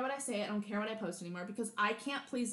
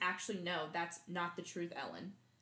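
put-on serious, straight-faced tone, lower and quieter; 4 semitones lower, 6 dB quieter than usual. Retelling how Dakota Johnson answered Ellen: imitating a very serious tone. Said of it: "in a very serious way and says".

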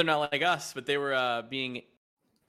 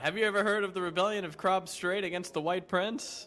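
high-pitched, loud yell; 5 semitones higher than usual. Voicing a character interrupting a speaker at a rally: yelling over a crowd. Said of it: "he'll yell out".

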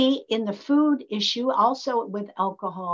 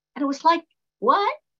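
ordinary talk

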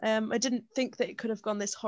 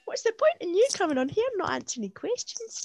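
high, mocking put-on impression voice. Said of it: "that Lorraine meme".

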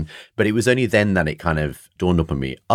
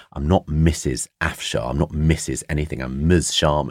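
mock very angry, furious, confrontational delivery. Retelling the mother's reply to a teacher at parents' evening: imitating an angry retort. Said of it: "very angrily".

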